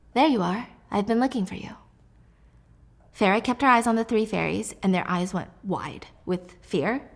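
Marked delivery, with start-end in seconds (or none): 0.1-1.7 silky, velvety, smooth-toned voice. Narrating a story, someone catches Farah and speaks, in a velvety, smooth voice. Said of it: "Then a velvety, smooth voice".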